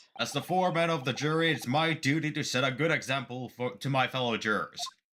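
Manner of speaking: put-on jerk character voice. Voicing the jury foreman in a game: bearded dick guy voice. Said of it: "make a bearded dick guy voice".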